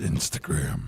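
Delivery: breathy, hushed, whispered robot-villain voice. Answering a question, in an Optimus Prime voice. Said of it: "talking like freaking Optimus Prime".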